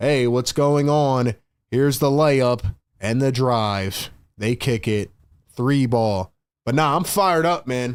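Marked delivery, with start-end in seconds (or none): 0.0-6.3 droning, flat, level, uninflected monotone. A streamer shows his chat how he could call the game: monotone. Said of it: "I could talk monotone".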